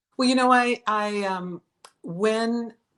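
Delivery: halting, stuttering start, repeating the first words. Guest asked when they moved from artist to coach, starting to answer: stuttering. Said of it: "sorry, I'm stuttering".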